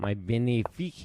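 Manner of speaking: "benefic" said in a put-on French accent. While offering trades in a game, saying my benefit: mock french accent. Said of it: "as the French would say ... That's my very good French accent".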